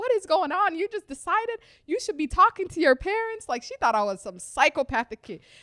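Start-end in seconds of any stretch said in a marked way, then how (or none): 0.0-3.5 much higher, louder, panicked freaking out. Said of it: "she was freaking out".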